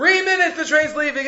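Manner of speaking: very loud announcing voice. Retelling a man announcing the train's departure to people, very loud announcing voice. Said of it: "announces in a very loud voice".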